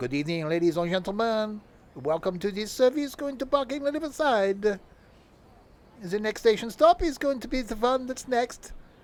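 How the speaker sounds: cartoon count voice. Showing off your repertoire, address ladies and gentlemen on a service in a Count from Sesame Street voice. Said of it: "Turned into the count from Sesame Street then".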